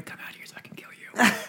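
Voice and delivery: faint, half-heard, breathy whisper. Acting out a voice heard in a horror scene: imitating someone whispering. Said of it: "It sounded like somebody whispering".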